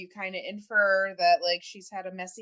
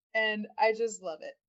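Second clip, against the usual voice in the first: ordinary talk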